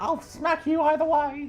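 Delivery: very high-pitched scolding, telling-off mum voice. Retelling a scolding from mum over a rude phrase: imitating mum telling off. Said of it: "Good impression there".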